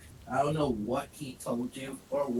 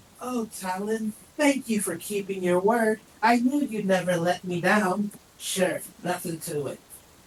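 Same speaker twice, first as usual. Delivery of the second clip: high-pitched, loud, sneering mocking tone; 7 semitones higher, 6 dB louder than usual. Asked why they said Sunspot, the speaker answers in a mocking Dylan tone. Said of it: "in a mocking Dylan tone".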